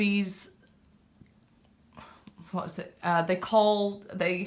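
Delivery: stuttering. Reading aloud and trying to name something about bees, stuttering. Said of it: "I'm stuttering because I can see it".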